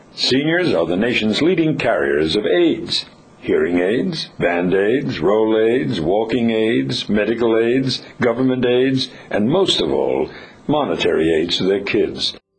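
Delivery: news flash style newscaster delivery. Reading a piece aloud at another speaker's request, as a news flash. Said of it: "you have to read it as a news flash".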